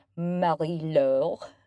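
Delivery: put-on French accent. Thanking donors, saying a sponsor's name in a french accent. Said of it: "That's my French accent".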